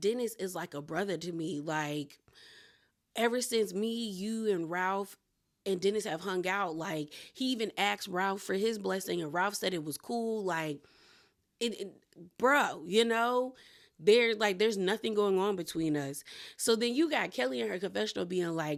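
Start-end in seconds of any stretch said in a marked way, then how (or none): none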